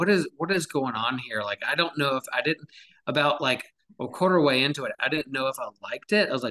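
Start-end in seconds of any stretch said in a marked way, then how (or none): none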